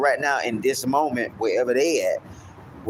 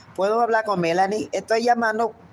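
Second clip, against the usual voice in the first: very high, put-on female voice; 9 semitones higher than usual. Recalling phoning a girl whose mother disliked boys calling: put-on female voice. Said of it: "so I used to talk in a female voice".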